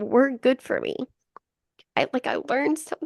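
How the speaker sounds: crying while talking. A business owner opening up in conversation, crying while talking. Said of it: "Let it out".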